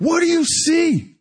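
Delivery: high, loud yelling.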